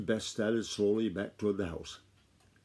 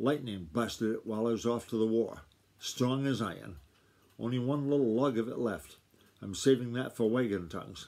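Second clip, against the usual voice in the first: ordinary delivery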